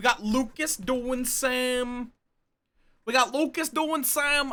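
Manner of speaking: thuggish goon voice with some drawn-out words. Streamer lists who is streaming before a raid, slipping into a goon voice. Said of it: "I'm going into my goon voice".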